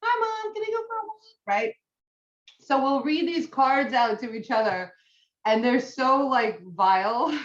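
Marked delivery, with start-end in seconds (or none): 0.0-1.2 squeaky, very high, goofy silly dog voice. Speaking as the family dog, asking mom for a walk; silly dog voice. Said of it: "give him a silly voice".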